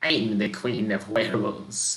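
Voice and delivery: put-on creaking, rasping old woman's voice. Game master voicing an old woman answering a player's question, raspy creaky old voice. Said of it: "she says in a raspy, creaky voice".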